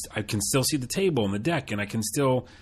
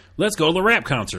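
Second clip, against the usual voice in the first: casual fake Southern accent, pitched up; 6 semitones higher, 5 dB louder than usual. Talking about slipping into that accent anytime, in a put-on southern accent. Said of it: "I feel like I just do it anytime".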